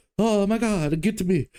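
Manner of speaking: put-on slipped-in Italian accent, very high-pitched. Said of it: "no, that's Italian".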